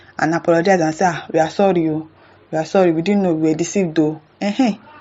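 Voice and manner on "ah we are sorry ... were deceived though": ordinary talk, nothing marked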